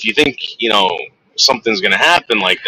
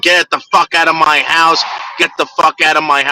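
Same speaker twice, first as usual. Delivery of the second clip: angry, high-pitched screaming outburst; 7 semitones higher than usual. Retelling a phone call in which the girlfriend screams at him: imitating someone screaming. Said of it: "she's screaming at him".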